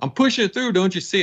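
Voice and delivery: put-on high hollering. Retelling how dad yelled from outside during a wiring job: imitating dad yelling. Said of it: "my dad's out there yelling at me".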